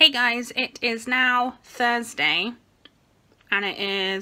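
mouth full, sucking a mint while talking. Speaker addressing viewers, talking while eating a mint. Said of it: "I'm eating a mint".

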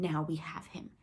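ordinary delivery

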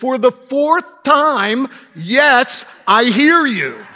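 mock, very loud, irritated voice, drawn out. Retelling a woman answering a man who asks again, in a mock-irritated voice. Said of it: "in an irritated voice".

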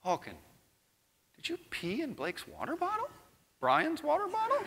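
very high, hushed half-whisper, close in the ear. Retelling pulling a little kid aside to question him; retold half-whisper. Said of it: "I whisper in his ear".

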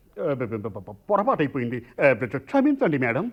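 low, over-the-top stammering delivery. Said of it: "అంత over action అక్కర్లేదు".

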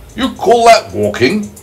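very high, exclaiming, cried-out voice. The centipede retorts to the earthworm, crying out. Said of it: "cried the centipede".

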